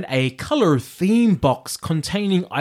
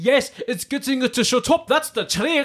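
put-on Scottish accent, pitched up high; 6 semitones higher than usual. Quoting a Shrek scene after learning the accent from Shrek: Shrek Scottish accent. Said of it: "Is that Scottish?".

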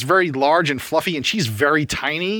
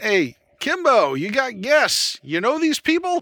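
high, rising shout calling out; 7 semitones higher than usual. Voicing a character who turns and shouts to the back: shouting to the back room. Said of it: "he turns around and, and shouts in the back".

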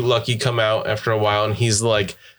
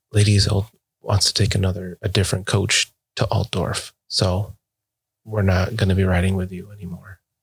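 hushed, soft voice; 4 semitones lower than usual. Voicing a character who takes a player aside to a corner, talking quietly. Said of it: "So she talks quietly".

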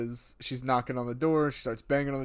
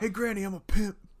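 mock yelling, higher pitched; 8 semitones higher than usual. Recapping a scene where someone passes a grandmother, retelling a yell. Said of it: "He's literally yelling".

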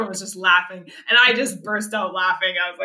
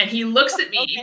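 ordinary delivery

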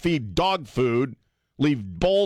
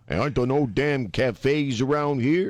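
put-on Bridgeport accent. Joking about raccoons out of place in the country: put-on accent. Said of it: "I can't do the accent anymore".

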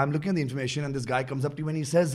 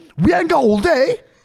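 shrill, booming, very high, loud London accent; 13 semitones higher, 9 dB louder than usual. Repeating a driving phrase meant to sound london, in a london accent. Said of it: "you have to sound London".

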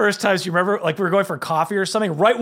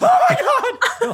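scream pitched way up high; 3 dB louder than usual. Retelling grabbing the sign at a stop sign: screaming like Homer Simpson. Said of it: "I screamed like Homer Simpson".

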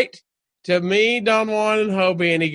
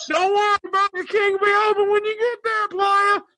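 very high-pitched heckling, jeering yell; 11 semitones higher than usual. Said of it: "people are yelling at me".

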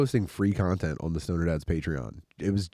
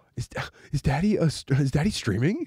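higher, put-on excited child voice; 7 semitones higher than usual. Retelling how the five-year-old reacted to the stream: imitating Fritz, excited five-year-old. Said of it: "Fritz goes like".

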